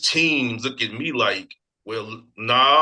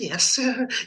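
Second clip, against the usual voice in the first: tiny, very high-pitched put-on voice; 11 semitones higher than usual. Saying they can't be corporate, showing a small put-on voice. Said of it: "I can't put on this little voice".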